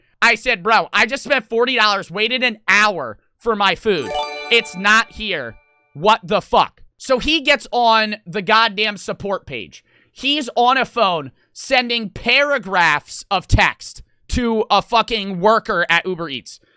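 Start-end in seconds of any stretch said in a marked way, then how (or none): none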